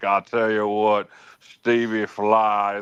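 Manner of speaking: slow, drawn-out, not-quite-right put-on man's voice. While talking accents with Stevie, show how Johnny talks in a not-the-best Johnny Garner impression. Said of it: "that's kind of how he talks".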